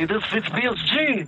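bad fake Russian accent. Retelling a game where other players caught them as the bad guy; horrible Russian accent. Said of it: "in, like, a horrible Russian accent".

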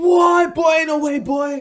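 high, loud, stunned outcry of disbelief.

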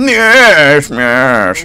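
fake Americanized British accent. Imitating an American imitating a British person, in an American's fake British accent. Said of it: "That's my imitation of an American imitating a British person".

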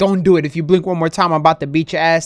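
ordinary delivery

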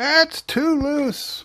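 high, slow, loud mock yell. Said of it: "probably screaming at me going".

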